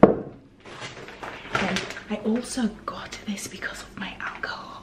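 mischievous, naughty-sounding whisper.

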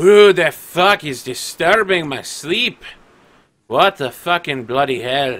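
put-on very loud, shrill drunk woman hollering. A drunk figure woken by a fight in the next room, in a drunk voice. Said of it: "drunkenly stumbling".

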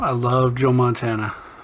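ordinary talk

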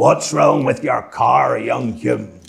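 play-acted rough, booming, big hollered bellow. Telling an anecdote about McRae and Hume's dead car, Paisley bellowing impression. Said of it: "Paisley bellows out".

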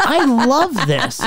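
high, slow, gushing delight.

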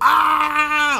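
high, loud, shocked scream. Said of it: "like Macaulay Culkin".

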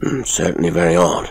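ordinary delivery

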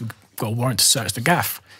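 ordinary talk

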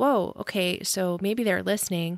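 normal talking voice

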